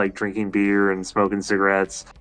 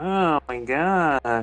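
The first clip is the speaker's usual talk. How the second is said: campy, theatrical, high, flamboyant cartoon gush, "god" stretched; 5 semitones higher than usual. Recall the Pinocchio performance that became a big meme, in a flamboyant Pinocchio voice. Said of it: "when he's all flamboyant".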